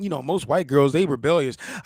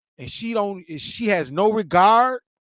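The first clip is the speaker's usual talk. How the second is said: plain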